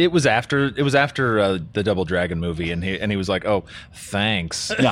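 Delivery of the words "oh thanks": mock sarcastic tone, lower and quieter. Recounting a man's reaction after the Double Dragon movie, real sarcastic. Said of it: "like real sarcastic".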